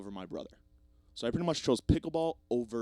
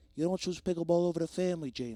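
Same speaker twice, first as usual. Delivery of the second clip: put-on pitched-up Canadian English accent, old woman voice; 6 semitones higher than usual. As the grandmother in heaven scolding James, do a Canadian English grandmother impression. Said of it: "a perfect impression of my Canadian English grandmother".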